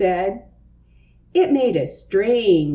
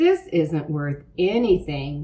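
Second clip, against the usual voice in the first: usual speaking voice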